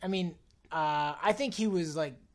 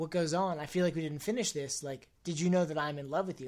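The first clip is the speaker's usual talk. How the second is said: usual speaking voice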